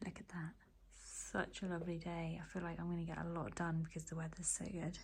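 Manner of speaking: quiet, soft, hushed, low-key talking. Filming your day in a studio with thin walls, talking really quietly. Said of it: "I'm talking really quietly".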